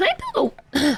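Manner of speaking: high voice cracking mid-phrase. Talking aloud to yourself, when your voice suddenly cracks mid-sentence. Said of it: "my voice just completely cracked".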